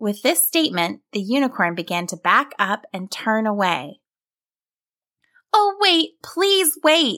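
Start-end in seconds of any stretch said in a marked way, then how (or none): 5.5-7.2 very high-pitched crying out. The younger sibling calls after the unicorn as it turns away, crying out. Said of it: "the younger sibling cried out".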